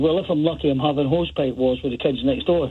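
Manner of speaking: usual speaking voice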